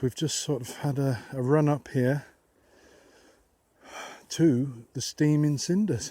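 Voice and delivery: out of breath, panting. Arriving after a run up to the steaming cinders, out of breath. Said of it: "I'm a bit out of breath".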